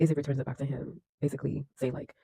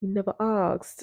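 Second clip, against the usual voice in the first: put-on British accent, pitched up; 6 semitones higher, 4 dB louder than usual. Retelling a character's reply in a scene from a show, in a British accent. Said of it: "I gotta say this in a British accent".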